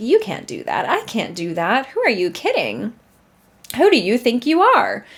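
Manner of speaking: put-on sassy tone. Describing the afraid part of oneself, voicing it in a mock-sassy tone. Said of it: "that sassy part of you that's like".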